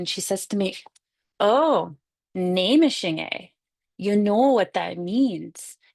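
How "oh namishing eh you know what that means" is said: put-on very slow Pennsylvania Dutch accent. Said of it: "she speaks in a beautiful Pennsylvania Dutch accent".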